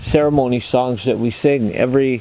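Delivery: ordinary delivery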